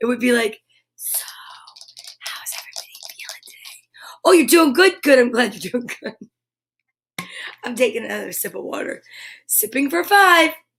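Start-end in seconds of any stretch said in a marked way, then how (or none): 1.0-6.2 put-on ASMR host voice. Showing how a try at asmr would sound: mock asmr whisper. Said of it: "There's no way I could ever keep a whisper going".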